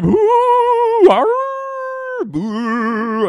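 very high, swooping put-on spooky voice. Greeting everybody for a Halloween show: put-on scary voice. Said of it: "I'm doing scary voices like an idiot".

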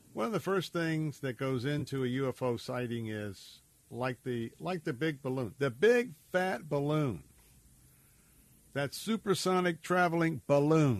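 dripping, over-the-top sarcasm with swooping pitch. Commentator talking about ufo reports, very sarcastic. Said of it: "I'm being very sarcastic".

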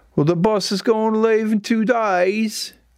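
high, bad Australian accent drifting British. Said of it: "So that's British".

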